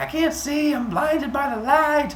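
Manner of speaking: shrill, very high, loud, terrified panicked scream. Narrating a myth, voicing a man blinded by a bright light, screaming. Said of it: "and he's screaming".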